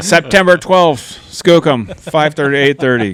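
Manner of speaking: put-on angry voice. Warned about being too loud, speaker switches to an angry voice. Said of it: "This is my angry voice".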